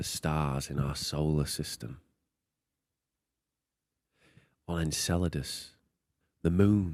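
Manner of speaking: very low, hushed, slow and drawn out. Doing a bad impression of Brian Cox: bad Brian Cox impression. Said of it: "So that's a really bad impression".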